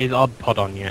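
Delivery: ordinary talk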